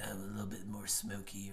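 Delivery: quiet, smoky DJ whisper.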